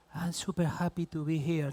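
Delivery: lacking confidence. A speaking coach shows how a voice without confidence sounds; unconfident voice. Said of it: "If you speak like this, you don't have confidence".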